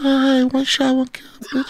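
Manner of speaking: put-on very high, squeaky small child voice.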